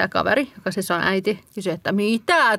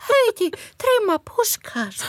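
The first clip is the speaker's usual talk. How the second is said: put-on toddler voice, much higher; 12 semitones higher than usual. Speaker repeats a small child's words, imitating a two-year-old. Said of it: "millä sä imitoit tätä kaksivuotiaa".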